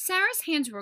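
plain

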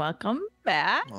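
mock rising questioning intonation. Retelling how another speaker welcomed everyone back: imitating a questioning tone. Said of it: "You said it kinda like a question".

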